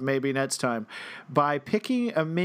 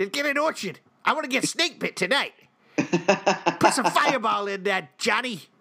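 over-the-top exaggerated Boston accent; 4 semitones higher than usual. Two speakers do a bit ordering drinks from Johnny, best Boston accent. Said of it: "That, folks, is our best Boston accent".

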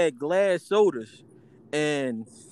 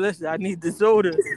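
put-on voice, halfway to crying. Retelling going back into the store as a little kid: imitating being halfway crying. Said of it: "halfway crying".

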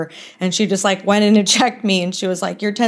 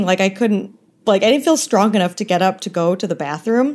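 ordinary talk, nothing marked

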